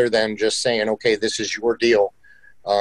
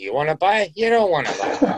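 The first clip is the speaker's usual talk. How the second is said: swooping New Jersey accent, pitched up, throughout; 7 semitones higher than usual. Describing how your sales pitch comes out, in a Jersey accent. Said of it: "that comes out in Jersey accent".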